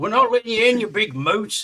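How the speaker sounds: loud, taunting, shouted jeer. Playing a character refusing entry to someone at the door, yelling. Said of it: "I'm just gonna yell".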